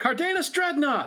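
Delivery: shouting out. As Kara, striking a pose in the scene: shouting out. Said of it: "strikes a pose and shouts out".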